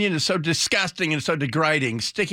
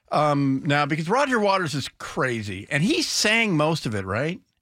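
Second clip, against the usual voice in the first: normal talking voice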